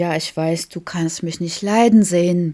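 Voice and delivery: ordinary delivery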